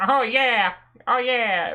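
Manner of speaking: squeaky, nasal character voice, pitched very high. Showing how Luigi sounds to the others in the conversation, in a nasally Luigi voice. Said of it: "like nasally voice he does".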